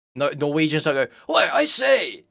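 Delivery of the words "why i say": high, put-on, posh, authoritative, borderline British voice. Mocking a put-on voice in YouTube videos, mock posh British-ish voice. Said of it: "a borderline British voice to sound authoritative and posh".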